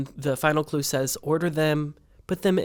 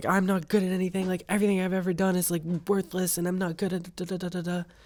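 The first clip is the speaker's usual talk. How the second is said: acted-out anguished, despairing, distraught screaming outburst; 4 semitones higher than usual. Acting out a man screaming on live national television; retelling a scream. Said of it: "he's like screaming like".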